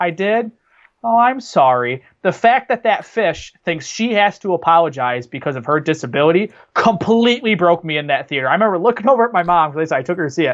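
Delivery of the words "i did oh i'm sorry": put-on very slow, sorrowful, sad delivery. Recalling a movie scene, the speaker quotes the fish: imitating Baby Dory's sad apology. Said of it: "she gets so sad and she goes".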